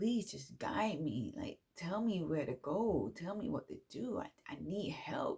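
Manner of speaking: acted tearful, sobbing voice. Retelling a night of asking for help: retelling own sobbing plea. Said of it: "I was sobbing".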